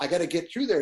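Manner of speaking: ordinary talk, nothing marked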